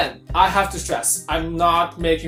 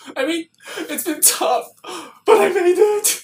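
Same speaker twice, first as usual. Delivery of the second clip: put-on tearful speech, fighting back tears; 12 semitones higher, 3 dB louder than usual. Imitating a fanner cooling off to hold back tears: imitating someone fighting back tears. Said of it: "fight back tears by cooling themselves".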